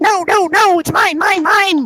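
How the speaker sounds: loud, slow, very high pitch. Claiming a magic bauble as a joke: Daffy Duck voice. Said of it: "to channel my inner Daffy Duck".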